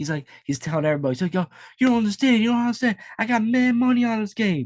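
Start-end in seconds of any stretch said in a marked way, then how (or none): 1.3-4.7 put-on very high, anxious, worried young voice. Imitating a young fan with money on the game: imitating a young fan's voice. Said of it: "he had that, like, voice".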